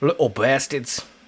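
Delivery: put-on strong, loud, big Irish accent. Showing how a man says the line, in a big Irish accent. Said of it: "He says it like big Irish".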